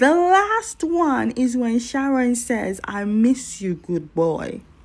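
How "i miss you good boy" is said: plain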